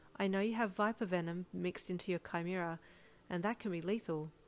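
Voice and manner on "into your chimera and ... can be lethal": ordinary delivery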